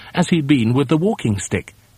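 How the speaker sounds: plain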